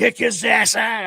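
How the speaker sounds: mock raw, shrill, high-pitched rough scream. Recounting watching a game with guests, re-enacting his own yell at the TV. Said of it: "here I am yelling".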